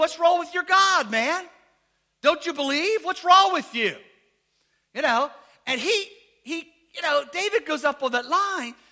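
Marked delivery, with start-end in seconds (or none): 0.0-3.9 mock-taunting, jeering tone. Retelling how a man mocked the other side before a battle; retelling a mocking taunt. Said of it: "he starts making fun of them".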